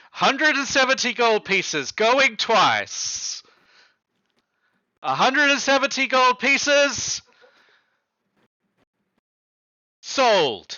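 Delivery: calling out loudly. A game master voicing an auctioneer closing the sale, in a raised voice. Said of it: "He raises his voice again".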